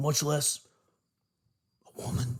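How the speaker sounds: hushed, wary whisper. Speaker asks someone a question and whispers this part. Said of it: "I gotta whisper that part".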